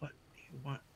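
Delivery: hushed whisper, barely audible. Turning around in the dark to ask someone: whisper. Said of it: "I guess I whisper".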